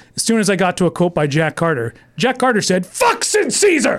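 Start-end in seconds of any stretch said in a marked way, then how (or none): 2.9-4.0 put-on very high, mild half-shout. Reading an audiobook and reaching a quoted line, screaming as Jack Carter. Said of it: "So I'm screaming in the audiobook".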